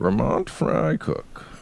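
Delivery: hushed, airy, breathy put-on movie-villain whisper. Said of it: "your Bane is your, your Captain Picard voice".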